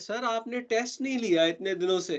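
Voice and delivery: high-pitched, eager, keen student voice.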